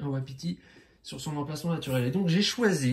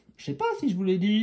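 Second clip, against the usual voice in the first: put-on voice lifted up high; 6 semitones higher, 3 dB louder than usual. Explaining a board game to viewers, the speaker switches to a high-pitched voice. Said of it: "je prends ma voix aiguë".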